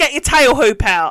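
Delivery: gruff, loud, barked delivery. Retelling how a bloke barked at him, imitating a barked order. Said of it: "this bloke just barks at me".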